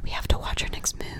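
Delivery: quiet sports commentator voice. Mocking golf commentators as a player tees off; whispering golf commentator. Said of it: "They're always like".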